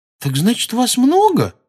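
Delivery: very high-pitched, disbelieving, incredulous tone. Narrating a girl questioning someone whose herd drove him out: incredulous question. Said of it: "недоверчиво спросила она".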